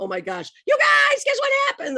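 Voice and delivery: mock thrilled yell, very high and swooping. Retelling shouting the news to her eighth grade class, retelling her own yelling. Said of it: "I'm yelling in the halls".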